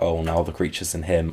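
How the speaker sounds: ordinary delivery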